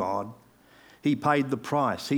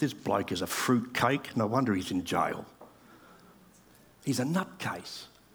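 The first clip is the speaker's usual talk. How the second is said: put-on mumble, much lower and quieter; 5 semitones lower, 6 dB quieter than usual. Retelling reading about a jailed man, retelling own under-breath mumbling. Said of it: "I was mumbling under my breath".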